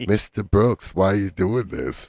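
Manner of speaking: put-on soft, nice voice. Retelling how a woman spoke to a cop: imitating a nice, soft voice. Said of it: "she gave him the, the nice, soft voice".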